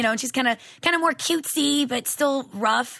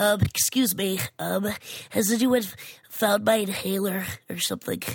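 put-on stuffy-nosed kid voice, low and slow; 4 semitones lower, 3 dB quieter than usual. Listing character voices they can do, in a stuffy-nosed little boy voice. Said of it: "I have like the stuffy nose little boy kid".

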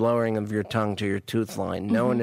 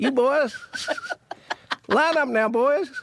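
very high, swooping, put-on Southern wrestling-coach accent; 4 dB louder than usual. After being told he sounds like one, speaker does a southern wrestling coach voice. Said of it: "talking like a Southern wrestling coach".

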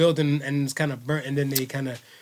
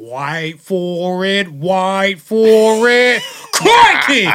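booming, high, drawn-out, slow belted cry; 5 semitones higher, 9 dB louder than usual. Retelling the devil on the left shoulder speaking: Crocodile Hunter voice. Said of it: "he's doing a Crocodile Hunter voice".

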